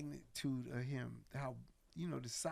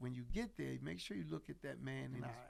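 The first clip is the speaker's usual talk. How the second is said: ordinary delivery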